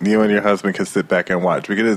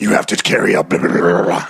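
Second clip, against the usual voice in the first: possessed demon voice, like a spirit taking over; 3 semitones lower than usual. Retelling how a praying woman suddenly spoke in another voice: demon voice. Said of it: "this demon voice comes out and it's just like".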